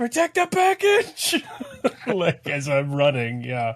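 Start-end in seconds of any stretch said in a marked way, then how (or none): 0.0-1.4 very high, shrill screaming. A player's character, running, screams an order to a teammate, screaming in character. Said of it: "I just start screaming at Allbee like".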